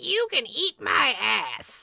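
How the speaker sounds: swooping, faked tough-guy bluster, clearly terrified. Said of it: "he is trying really hard to act tough, but he is terrified".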